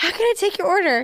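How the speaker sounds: imitated out-of-breath voice. Retelling a drive-through order: imitating someone out of breath. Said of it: "And he's out of breath".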